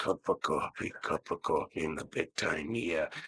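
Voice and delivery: breathy, hushed, close whisper. Imitating a wrestler's promo style: Randy Savage impression. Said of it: "It's like Randy Savage was".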